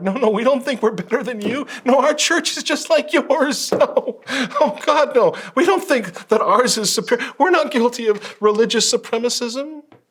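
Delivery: put-on very high, abject, pathetic begging tone. Mocking shepherds begging the world: imitating pathetic begging. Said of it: "pathetically begging the world".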